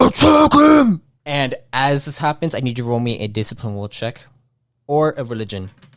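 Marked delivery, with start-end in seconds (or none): 0.0-1.0 muffled yell, much higher and louder. A character clinging to Doctor Joel yells out, a muffled yell. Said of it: "his muffled voice yell out".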